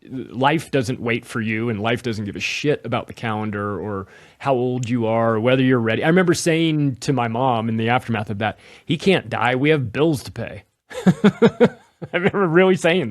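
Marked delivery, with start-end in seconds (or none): none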